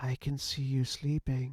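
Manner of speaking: tiny, small, whispered voice. A small voice that no one else reacts to, small whispering voice. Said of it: "you hear a voice whispering".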